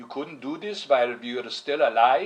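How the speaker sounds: put-on Hungarian accent, guilt-laden and guilt-tripping tone. Quoting what their mom would say to them, imitating mom's Hungarian accent. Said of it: "with her Hungarian accent".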